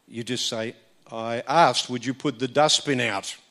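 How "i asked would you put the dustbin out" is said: firm, demanding voice projected outward. Showing how to ask before getting to shouting: projected, demanding voice. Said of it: "Notice that we're projecting our voice in such a way that it's communicating something".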